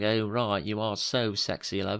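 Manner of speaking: slow, stretched-out put-on English accent. Acting out what a man's English accent makes them hear, in an English accent. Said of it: "his just English accent".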